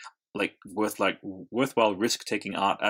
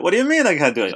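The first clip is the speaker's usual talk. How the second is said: very high, very loud squealing voice; 10 semitones higher, 11 dB louder than usual. Riffing on two characters drifting together: George Costanza and Jerry Seinfeld voice.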